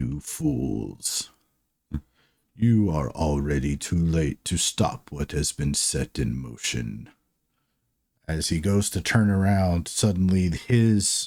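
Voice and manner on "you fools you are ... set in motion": deep, hushed, resonant voice. Narrator voices a figure unfazed amid spreading flames; deep booming voice. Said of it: "deep booming voice".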